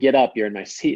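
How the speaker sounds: mock rude, aggressive, commanding delivery. Retelling what a passenger said on a plane: imitating an aggressive demand. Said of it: "he said it aggressively".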